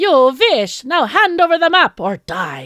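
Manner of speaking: very loud, botched, bad German accent. Storyteller voices the arch-nemesis arriving in a tank, in a bad german accent. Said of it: "I should give her a German accent".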